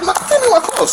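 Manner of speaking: very high, sharp, forceful delivery, pitch way up.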